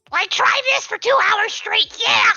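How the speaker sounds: squeaky character voice. Giving in on stream and trying out a requested voice: Toad voice. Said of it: "she does a good Toad voice".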